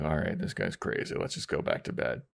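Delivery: quiet, hushed, breathy whisper. Retelling what a roommate whispered about a guest: imitating a whisper. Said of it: "looks at Fran and whispers".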